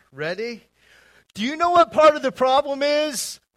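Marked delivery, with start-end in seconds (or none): 1.4-3.4 very high, very loud New Yorker accent. Leading listeners to repeat a line together, in a New York accent. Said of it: "Bring back your New Yorker accent here".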